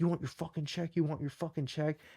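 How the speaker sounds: play-acted angry, hushed, furious, in-your-face tone. Retelling a bartender getting in his face: imitating an angry bartender. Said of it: "this guy gets so fucking mad".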